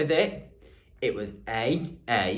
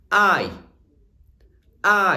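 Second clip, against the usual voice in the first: big, loud, full voice, much higher pitch; 8 semitones higher, 9 dB louder than usual. Leading listeners through a vowel sound, in a big loud voice. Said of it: "In a big loud voice now".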